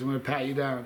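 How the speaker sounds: ordinary delivery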